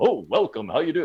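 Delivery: put-on radio announcer voice. Showing a voice never put on for the mic: put-on radio broadcaster voice. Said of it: "I don't put on Joe Radio, Joe broadcaster voice".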